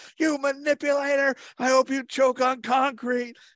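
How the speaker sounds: put-on, very high, shrill, stretched-out shriek. Describing a favorite viral TikTok of a girl breaking up with her boyfriend, imitating a girl screaming. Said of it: "she's like screaming".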